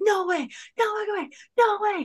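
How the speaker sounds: very high, thrilled, shrieking excited yell. Telling how he opened the thing he'd always wanted, imitating him yelling. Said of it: "you just hear him start yelling".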